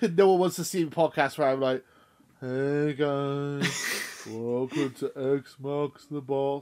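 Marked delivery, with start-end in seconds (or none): 2.4-6.6 lifeless, tired, very slow flat monotone. Podcast host showing how a dull episode intro would sound, flat and unanimated. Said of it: "I try and be animated".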